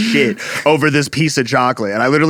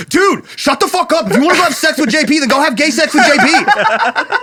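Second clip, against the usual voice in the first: put-on very high, mad, furious outburst; 14 semitones higher than usual. Retelling how the listener snapped at them over jokes about JP, imitating an angry yell. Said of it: "You were so mad".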